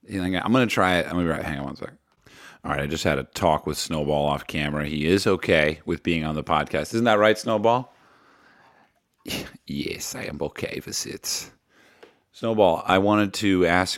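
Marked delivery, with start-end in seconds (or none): 9.6-11.5 breathy, hushed, slow, bad put-on German accent. Answering on Snowball's behalf about being on the podcast, in a bad German accent. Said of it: "I need to work on my German accent".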